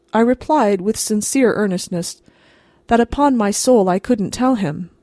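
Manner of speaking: plain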